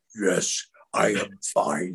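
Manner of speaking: soft put-on character voice, held throughout. Answering a man who keeps asking if he is okay, doing the put-on voice. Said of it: "I just did the voice".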